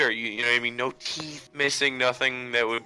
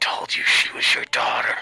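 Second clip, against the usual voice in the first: loud, breathy stage whisper, close to ear. Speaking in character into another character's ear: whispering in character. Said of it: "I whisper into Artemis's ear".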